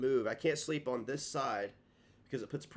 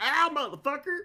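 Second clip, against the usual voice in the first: put-on very high, loud, distinct Southern accent cry; 13 semitones higher, 6 dB louder than usual. Repeating the cry of the guy who punched him: distinct southern accent. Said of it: "my very distinct, uh, southern accent there".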